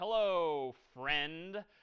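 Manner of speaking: put-on sarcastic tone. Writing a greeting into example code, saying it in a put-on sarcastic tone. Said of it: "maybe I'm being a little sarcastic here".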